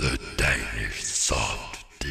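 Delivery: low, slow, ominous doom voice.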